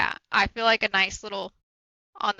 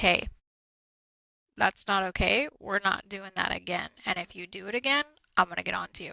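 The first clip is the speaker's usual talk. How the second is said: put-on calm, cool, even, gentle tone; 4 dB quieter than usual. Mother acting out how she first speaks to her kids, retelling calm, collected voice. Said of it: "the calm, cool, collected voice".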